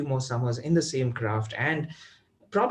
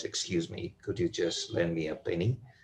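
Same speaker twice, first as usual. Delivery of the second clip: deep, soft bass-baritone, commanding tone; 9 semitones lower, 7 dB quieter than usual. Retelling how a man demoed a beggar's line, imitating a deep bass baritone. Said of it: "He said with a deep bass baritone voice".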